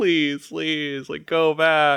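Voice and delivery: high, tearful, desperate sobbing voice. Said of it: "screaming at them, like".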